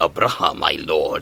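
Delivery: deep, low, darker character voice. Showing the other audition take: deeper, darker Helcub voice. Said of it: "I did it a little deeper".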